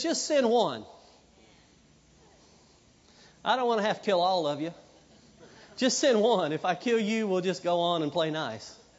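ordinary delivery

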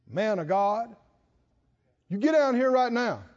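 insincere, sarcastic, bossy tone. Acting out a captain ordering the man of God down: imitating a sarcastic command. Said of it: "They're being sarcastic about this".

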